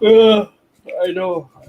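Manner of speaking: words said through a high yawn. Tired speaker replies to others' greetings, talking while yawning. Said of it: "Sorry, I'm yawning".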